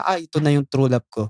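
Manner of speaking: ordinary delivery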